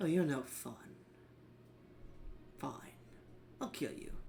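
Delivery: hushed, breathy, vile monster whisper. Voicing a creature who floats above a player: vile creature's voice. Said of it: "this vile creature".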